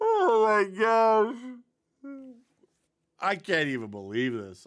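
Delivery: laughing, high-pitched disbelief. Reacting in disbelief to a play being shown, laughing while talking. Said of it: "I'm sorry I'm laughing".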